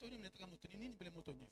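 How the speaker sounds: soft, fast, low voice, under the breath. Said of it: "si je parle à voix basse".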